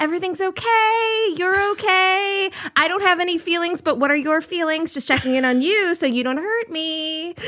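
put-on high, non-threatening phone voice. Explaining how they once used their voice to seem non-threatening: old higher phone voice. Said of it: "It was a higher voice".

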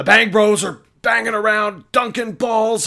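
very high, loud, flip-out rant. Imagining a commentator on First Take ranting: Stephen A flipping out. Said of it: "Stephen A on First Take flipping out".

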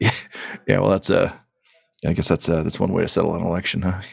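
muttering with a chuckle. Player describes a character laying his bolter across his lap, chuckling and muttering. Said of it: "continues to kind of like chuckle and mutter".

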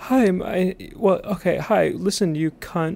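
high womanly voice, very slow and drawn out. Imitating how a caller sounded at the start of a call: imitating a caller's high womanly voice. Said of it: "He sounded like this".

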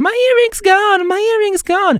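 very high, tearful, put-on sobbing wail. Acting out a reality-show scene, imitating someone crying over a lost item as a retelling. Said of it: "inizia a piangere C'è la cry face".

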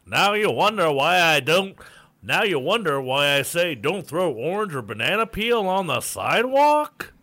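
put-on old-timey oratory style, loud and high pitched. Asked by the other speaker to read a story's closing line: old-timey Teddy Roosevelt voice. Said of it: "do an old timey voice".

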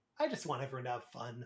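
fast, soft, half-sarcastic tone.

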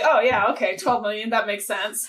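acting nonchalant and cool. Retelling one's own reply to a broker, imitating playing it cool. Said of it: "I played it cool".

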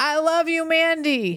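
put-on very high, very slow, drawn-out shout. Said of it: "someone shouts out".

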